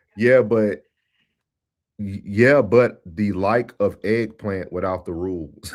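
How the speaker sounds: ordinary talk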